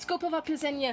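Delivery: name said very fast. Naming a festival so no one can correct the pronunciation, rushing a name very fast. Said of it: "I said that really fast".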